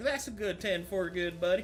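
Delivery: put-on Southern trucker accent. Voicing a character in the game after announcing it: Southern trucker accent. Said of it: "Southern trucker".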